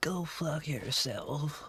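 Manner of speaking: very sickly voice. Suggesting how to tell people at work off, demonstrating it: really sickly voice. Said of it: "Do it in like a really sickly voice".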